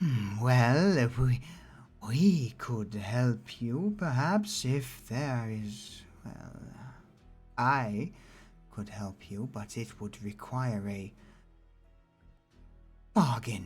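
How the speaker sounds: whispering. Voicing the nurse leaning over a character's shoulder: whispering in his ear. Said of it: "whispers in his ear".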